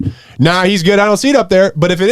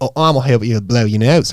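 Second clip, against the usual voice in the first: put-on New Zealand accent; 7 semitones lower than usual. Retelling a story, voicing the boy's mom: put-on New Zealand accent. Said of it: "Just stop with the voices".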